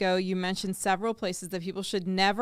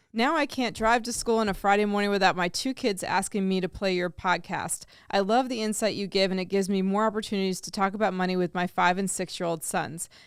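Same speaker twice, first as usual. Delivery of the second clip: plain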